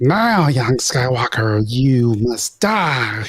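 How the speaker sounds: very slow voice, every word drawn out. Quoting the Emperor's line from Return of the Jedi: attempted Emperor voice. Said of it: "I can't do it. My voice is fucked up".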